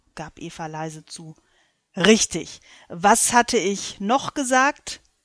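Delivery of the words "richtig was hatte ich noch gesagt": demanding, insistent, much louder. God presses Eva on what he had said: demanding. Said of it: "Gott klang fordernd".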